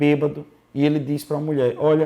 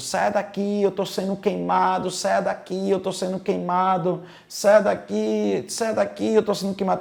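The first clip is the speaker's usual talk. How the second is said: mock loud shouting, straining as if struggling; 4 semitones higher than usual. Retelling how a drunk husband began screaming in bed: imitating someone shouting loudly. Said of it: "Ele começa a gritar alto".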